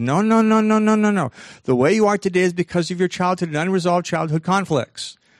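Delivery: high, loud outraged no-no-no. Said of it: "psychology had a conniption fit".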